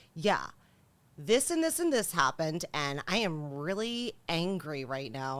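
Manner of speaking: ordinary talk, nothing marked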